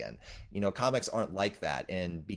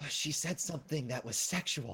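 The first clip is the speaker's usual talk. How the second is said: mock gasping, higher; 6 semitones higher, 3 dB quieter than usual. Retelling a girlfriend at a Batman movie, imitating her gasping. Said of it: "she was gasping at every single thing".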